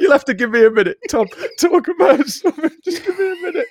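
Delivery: very high, words squeezed through laughter, crying laughing. Speaker asks Tom for a minute to recover: crying with laughter. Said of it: "I'm actually crying with laughter".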